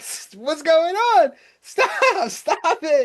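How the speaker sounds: high, loud yelling. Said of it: "people yelling".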